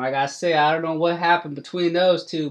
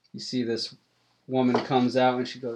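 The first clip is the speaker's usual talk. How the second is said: ordinary talk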